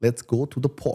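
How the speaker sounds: attempted Russian accent. Practicing accents with a partner, repeating a sample sentence as a Russian accent attempt. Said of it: "you want to do Russian?".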